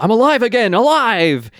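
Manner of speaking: acted-out, high, jubilant, bursting excited exclamation. Retelling a line from a Goosebumps book: imitating an exclamation. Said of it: "he exclaims".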